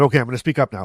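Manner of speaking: mock speaking up. Man retelling how his wife asked him to speak up, trying to speak louder. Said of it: "And I went louder".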